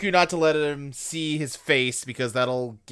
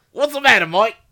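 loud, high put-on Australian accent; 8 semitones higher, 7 dB louder than usual. A podcast host does a bit with the co-hosts, in an australian accent. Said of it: "I'm doing a perfect Australian accent".

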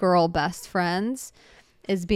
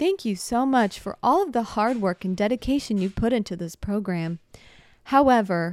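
put-on dumb robotic female voice; 3 semitones higher than usual. Retelling how a screen announced eliminations to young girls, in a dumb robot woman voice. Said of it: "this like dumb robot woman voice was like".

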